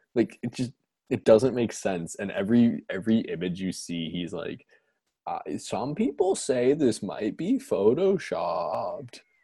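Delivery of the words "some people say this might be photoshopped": slow voice, pitch jumps, stress on wrong syllables. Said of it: "the pinnacle of accenting the wrong syllable".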